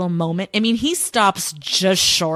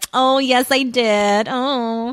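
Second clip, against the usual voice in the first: put-on, very drawn-out, very slow, fawning gush; 4 semitones higher than usual. Mocking how she reacts to his attention: mock fawning over attention. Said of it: "loving all of his attention".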